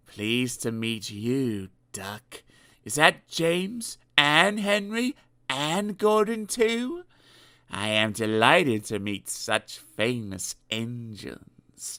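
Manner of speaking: slow, smooth, silky oily purr. Narrator reads Diesel greeting Duck and the other engines, in an oily purr. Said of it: "purred Diesel in an oily voice".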